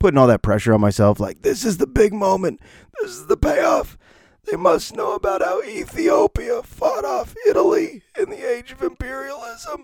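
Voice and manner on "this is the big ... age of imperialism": very high, swooping speech, voice almost gone. Retelling teaching students after losing the voice: imitating own lost voice. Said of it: "That's how I sounded for three days".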